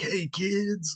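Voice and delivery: high, try-hard cool, would-be casual tone. Telling students what a cool teacher sounds like: imitating a would-be cool teacher. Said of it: "If a cool teacher's like".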